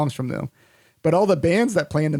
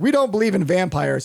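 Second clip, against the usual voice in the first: put-on annoyed voice, higher; 4 semitones higher than usual. Retelling how locals answered an interviewer about vampires: imitating annoyed locals. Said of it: "most of them are visibly annoyed".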